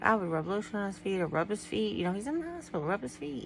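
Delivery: ordinary delivery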